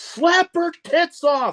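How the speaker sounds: very high, loud yelled call. Recounting yelling out at someone standing in the corner, retelling a yell. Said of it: "I just yelled out".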